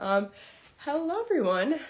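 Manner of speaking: winded, breathless, slightly high voice. Host greets listeners after running downstairs to grab something, out of breath. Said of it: "I am out of breath".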